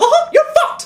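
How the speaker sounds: very high, raging, squeaky, furious voice. Explaining how his voice rises when he rants, the speaker demonstrates an enraged Mickey Mouse voice. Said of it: "Eventually I just turn to Mickey Mouse, filled with rage".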